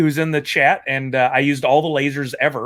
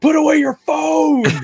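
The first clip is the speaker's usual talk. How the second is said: mock piercing, shrill, high-pitched shriek; 14 semitones higher, 3 dB louder than usual. Retelling yelling at a loud phone in a packed theater: imitating someone screaming.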